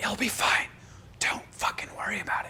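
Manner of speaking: breathy whispered yell, forceful but hushed. Speaker recounting reassuring someone who got petrified: retelling a yell-whisper. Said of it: "I'm like yelling, whispering".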